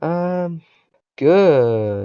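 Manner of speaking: sarcastic "good". Answering a question about how the week has been: sarcastic-sounding good. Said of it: "that was the most sarcastic good I've ever heard".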